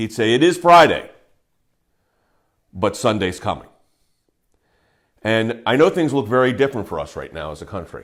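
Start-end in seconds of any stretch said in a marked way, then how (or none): 0.3-3.7 put-on tone of great conviction, louder. Quoting how E.V. Hill would say his line, imitating E.V. Hill's unbelievable conviction. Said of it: "say it with such unbelievable conviction".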